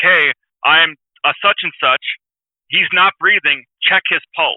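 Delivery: ordinary delivery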